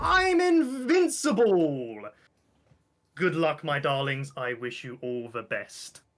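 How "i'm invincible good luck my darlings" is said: very high, shrill, very loud swooping scream. Voicing Lady Friendship turning to the crowd after a lucky roll: screaming. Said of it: "turns to the crowd and screams".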